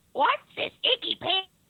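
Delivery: very high, shrill, loud cartoon character voice. Trying a Toad impression after being asked to say a line: Toad voice. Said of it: "my Toad impression".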